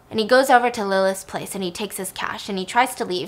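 normal talking voice

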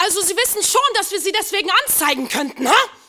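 mock indignant official voice, very high and very loud. Retelling what a German official behind a glass wall said: mock-angry German official. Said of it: "Nur eine hauchdünne Glaswand trennt mich vom Zorn des deutschen Staatsdieners".

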